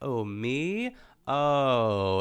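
poised pageant-style delivery, drawn-out oh sound. Imitating how a pageant contestant talks: imitating a poised, deadpan pageant voice. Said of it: "it's poised and it's kind of deadpan".

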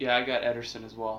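deflated, beaten-down, defeated, dejected tone. Answering when asked what he's got, sounding defeated. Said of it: "You sound defeated".

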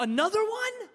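very high-pitched voice full of disgust. Retelling a son's ungrateful reply to a repeated gift: imitating a disgusted child. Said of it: "with disgust".

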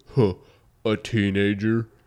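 loud, faked, put-on voice. Retelling what a kid at the door answered: imitating a super deep voice. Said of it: "Super deep voice".

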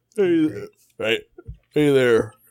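put-on Southern US accent. Told to do his turn at voices, greeting in a southern accent. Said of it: "You're going southern".

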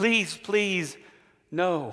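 mock begging, pleading tone. Retelling a parable, the indebted servant begging the king: acted begging for forgiveness. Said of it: "he begs for forgiveness".

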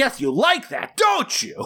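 very high, overacted, swooping hammy stage yell. Retelling a scene from a film: imitating a killer's over-the-top yell. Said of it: "Renaissance gear and yells".

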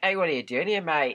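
put-on Australian accent. Telling a silly myth, speaker voices the little green man atop the rainbow, in an australian accent. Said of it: "Sorry, that was Australian".

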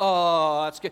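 over-the-top pantomime exclamation. Showing the congregation the wrong, pantomime way to sound awed: exaggerated pantomime "oh". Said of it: "you're not in a pantomime".

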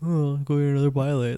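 flat, machine-like delivery. Retelling what Kawhi said about getting another pilot, Kawhi robotic monotone. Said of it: "Kawhi sounded like a robot though".

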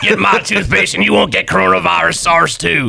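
put-on raspy radio-host voice. Pitching toothpaste to a patient in an impression of Alex Jones. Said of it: "want Matt to talk like that".

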